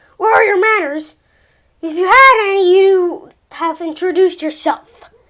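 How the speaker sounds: loud, rough, grumbling, gruff man's voice. Narrator reading a man speaking to a boy from behind him, gruff voice. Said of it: "he heard the gruff voice behind him".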